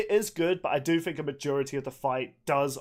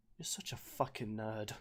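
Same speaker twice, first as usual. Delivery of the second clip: hushed, very quiet, dead-serious tone; 4 semitones lower, 14 dB quieter than usual. Answering the other speaker's question about gun sound effects, in a serious voice. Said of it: "I just wanted to do my serious, like, you're such a nerd voice".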